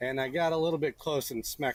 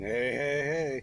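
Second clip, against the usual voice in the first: put-on cartoon character voice. Mid-commentary, the speaker tosses off a quick Fat Albert impression. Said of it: "That was my Fat Albert impression".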